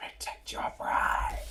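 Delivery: gentle, close whisper. Player character whispering into her ear as she gets up, whispering. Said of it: "I'm gonna whisper into her ear".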